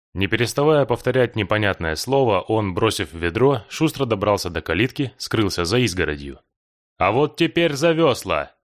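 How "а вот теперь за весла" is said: urgent, high-pitched, called out loudly. A man starts rowing the boat away and shouts. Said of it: "крикнул Влад".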